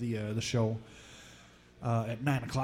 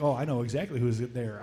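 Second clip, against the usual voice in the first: ordinary talk, nothing marked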